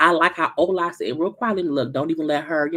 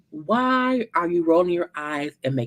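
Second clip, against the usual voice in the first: mock snippy, attitude-filled tone. Retelling a castmate's question to another castmate: imitating an attitude-filled question. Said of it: "with a fucking attitude in her tone".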